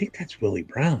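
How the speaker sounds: low, hushed, secretive whisper. Retelling nudging a son to point someone out: retelling own whisper. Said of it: "and I whisper it".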